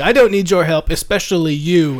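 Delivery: short, snappy, curt, loud yell. Voicing a character who turns and refuses help: curt yell. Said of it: "he kinda curtly yells at you too".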